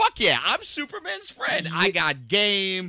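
mock brash, loud, swooping, cocky swagger. Imitating this story's version of Jimmy Olsen: swaggering confident Jimmy Olsen voice. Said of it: "there's a swagger and a confidence".

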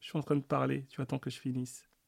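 put-on calm, hushed. A parent recounts their child hushing the nanny mid-sentence; retelling a calm hush.

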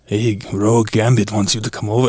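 corny, cringey cartoon-hero style delivery. Describing the old cartoon version of Gambit: Gambit impression. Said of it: "he talks in the third person, and he's like".

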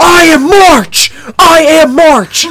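shrill, booming, long-stretched scream. Retelling a bettor screaming at his buddy after winning: imitating someone screaming. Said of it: "over screaming at his buddy".

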